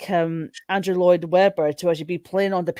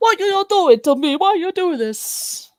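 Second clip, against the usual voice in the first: put-on very high-pitched, Italian-accented motherly voice; 12 semitones higher, 4 dB louder than usual. Describing a performance, the speaker acts it out in an italian mother impression. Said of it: "my Italian mother impression".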